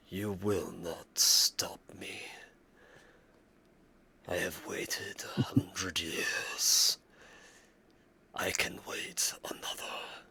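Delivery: almost whispering, very faint, hushed, disembodied. Narrating a game, voicing a voice heard through the caverns, almost a whisper. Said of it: "almost a whispering through the caverns".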